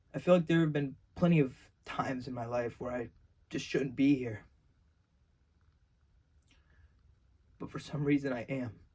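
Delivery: emotional, choked-up, reflective voice. Talking about being saved and still being here, getting emotional. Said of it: "I'm sorry for getting emotional".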